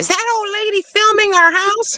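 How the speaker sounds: mock high, squeaky old lady voice.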